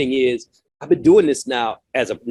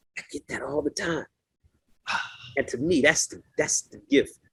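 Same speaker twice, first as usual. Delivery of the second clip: plain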